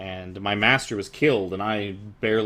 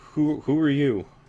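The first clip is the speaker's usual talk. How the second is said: stuttering, stammering, much higher; 6 semitones higher, 3 dB louder than usual. A figure behind a lectern questions the newcomers, stammering. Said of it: "sort of like stammers out like".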